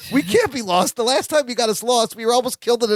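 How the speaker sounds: put-on frantic, alarmed, panicked outburst. Retelling a girl's reaction to being lost, imitating someone freaking out. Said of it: "Jennifer freaks out and goes".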